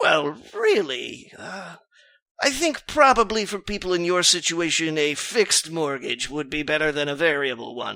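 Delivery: dry, raspy, dried-out voice. Narrating a banker who speaks at a meeting, dry, raspy voice. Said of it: "his dry, raspy voice begins".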